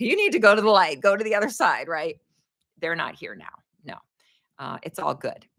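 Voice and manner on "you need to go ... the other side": acted, high-pitched yell out into the room. Retelling ordering a spirit to leave: imitating own yell. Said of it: "because I yelled".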